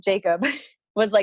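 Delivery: ordinary delivery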